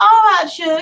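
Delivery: put-on sugary Southern accent. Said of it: "I used my sweet Southern accent".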